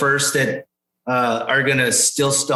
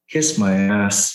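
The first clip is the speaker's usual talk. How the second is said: put-on mutter under the breath, lower; 4 semitones lower than usual. Retelling his reply when someone questioned his outfit; retelling a mutter under breath. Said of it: "under my breath".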